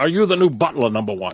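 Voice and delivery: mock old person voice. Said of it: "Now you sound like Patrick Stewart".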